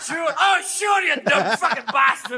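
put-on Scottish accent. Retelling landing in Scotland, imitating locals: mock Scottish accent. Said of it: "go drinking with a Scotsman".

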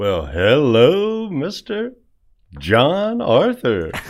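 slow, swooping put-on radio announcer voice. Greeting the host while trying out a new radio personality voice. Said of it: "I thought I'd just trying out a new voice there".

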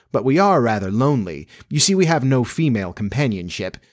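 ordinary delivery

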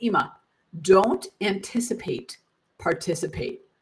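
imitated deadpan delivery. Retelling what the speaker's child said when asked about ropes courses, retelling a deadpan reply. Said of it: "he looked at me deadpan and he said".

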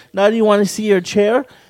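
normal talking voice

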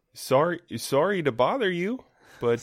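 put-on Minnesota accent. Interrupting someone in a scene, Minnesotan accent. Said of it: "I think that was more of a Minnesotan accent".

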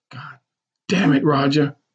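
hushed whisper. Narrator reads a character speaking beneath the narrator's own screams, whispered. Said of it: "Mama Hattie whispered".

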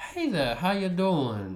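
put-on high, swooping, sing-song Louisiana Southern accent. Retelling how an old dude greeted the speaker: Louisiana accent. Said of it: "he talked like someone from Louisiana".

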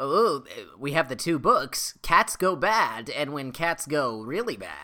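polished, well-elocuted radio commercial announcer voice. Describing a guy's interesting delivery, imitating him in a radio commercial voice. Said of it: "it really sounds like the voice of a radio commercial".

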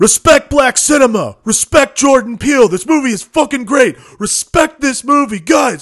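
sudden, shrill, very high, very loud yelling. Retelling how a man in a theater suddenly started shouting: imitating a man shouting. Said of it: "he all of a sudden starts shouting".

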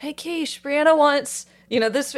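put-on very high yell carried across rooms. Retelling how he called out to someone in the other room, retelling a yell to another room. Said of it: "he yells to the other room".

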